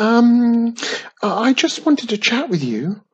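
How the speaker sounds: very high, sputtered, spluttering words. Reading a story, a character answers a voice from the far end of a hall, spluttering. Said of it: "Wiz spluttered".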